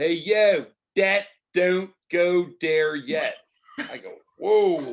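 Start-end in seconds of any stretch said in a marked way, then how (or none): 0.0-3.3 put-on slow, drawn-out Philadelphia accent. Telling about his piano player from philly, philly accent imitation. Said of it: "My piano player's from Philly".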